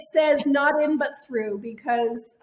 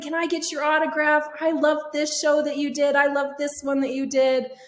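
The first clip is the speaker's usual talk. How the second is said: put-on eager, excited gushing children's chatter; 3 semitones higher than usual. Retelling kids who came up asking for an autograph: imitating excited kids. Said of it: "so excited".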